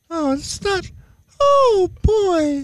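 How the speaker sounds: very high, cartoonish mouse voice. On a morning show, answering another speaker in Mickey Mouse voice. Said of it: "Is that your Mickey Mouse?".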